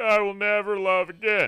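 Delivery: very loud, slow, level, booming monotone. Retelling a convention act, reading a princess line as Patrick Warburton. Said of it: "the guy did Patrick Warburton really, really well".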